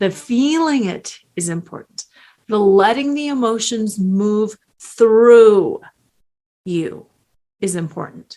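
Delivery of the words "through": heavy stress on the word "through". Speaking about grieving after a betrayal, with stress on 'through'. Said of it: "notice I emphasize the word through".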